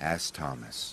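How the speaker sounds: plain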